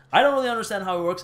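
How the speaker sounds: very fast, rushed, rattled-off talking.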